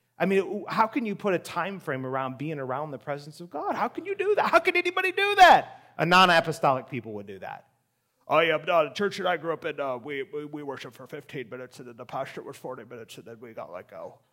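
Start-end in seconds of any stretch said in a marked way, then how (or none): 8.3-14.2 heavy, tongue-in-cheek, acted-out sarcastic tone. Imitating what a non-apostolic churchgoer would say about worship: sarcastic imitation. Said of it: "I'm sorry for being sarcastic".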